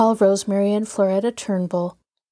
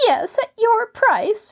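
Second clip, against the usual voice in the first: sniffy, sniffing, very high; 13 semitones higher than usual. Narrator voicing a woman replying to a man's excuse, sniffing. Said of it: "florida sniffed".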